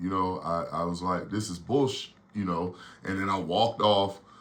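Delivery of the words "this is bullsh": mock sulky, sullen attitude. Retelling muttering after being told by the coach not to bother him: imitating own past attitude. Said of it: "I got an attitude".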